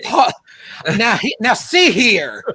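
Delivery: loud, high blustering rooster voice. Hosts joking about bad impressions, one answers in Foghorn Leghorn voice. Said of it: "Foghorn Leghorn".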